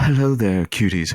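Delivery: put-on husky voice. Teasing the other speaker about her husky voice, in a mock husky voice. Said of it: "I have a husky voice".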